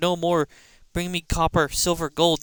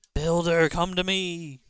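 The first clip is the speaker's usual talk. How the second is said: spooky, eerie, creepy voice; 3 dB quieter than usual. Mysterious voice calls the builder from near the old mine, spooky voice. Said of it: "What the heck was that spooky voice?".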